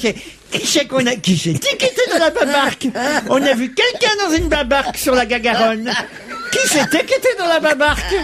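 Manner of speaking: put-on very high, cooing, laughing baby talk.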